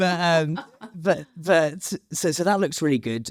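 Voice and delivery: high, put-on radio announcer voice.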